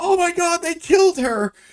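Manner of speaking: very high, drawn-out, terrified shriek. Retelling a movie scene where college kids panic: imitating someone screaming. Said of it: "screaming like".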